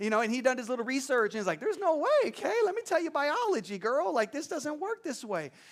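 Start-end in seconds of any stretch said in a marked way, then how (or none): 1.6-5.5 doubtful, having-none-of-it, pitched-up dismissive tone. Retelling how Joseph reacted to the story: imitating Joseph, unconvinced. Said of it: "he wasn't buying it".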